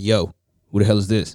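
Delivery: hard, street-tough delivery. Speaker retells calling through the door when nobody answered: put-on tough street voice.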